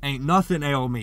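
sulky, combative tone. Narrator voicing a man's reply to the artist, sullen and belligerent. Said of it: "said in a sullen, belligerent voice".

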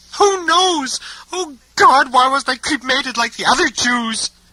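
very high shouting while crying. A woman speaks to him in the story, shouting and crying. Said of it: "She was both shouting and crying".

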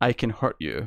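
deadpan, completely straight, showing no reaction. Retelling a funny exchange, the speaker gives Zoe's reply, retold deadpan.

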